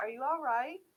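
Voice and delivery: calm, soothing, gentle voice. A game master voicing an unseen speaker to a player's character, very calming voice. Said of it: "you hear a very calming voice that says".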